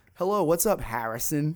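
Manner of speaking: put-on loud New Jersey accent, strongest on Harrison. Teasing the listener about how they say harrison: imitating new jersey accent. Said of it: "It's like the most Jersey word".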